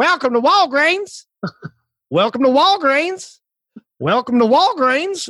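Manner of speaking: put-on very high-pitched Southern accent. Imitating a lady who welcomed each of them in a row, southern accent. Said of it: "a Southern accent".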